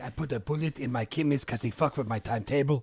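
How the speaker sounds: put-on angry voice in a French accent. Retelling a movie villain's line in Tchéky Karyo's accent. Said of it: "his accent, he's like".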